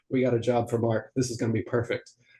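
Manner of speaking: ordinary talk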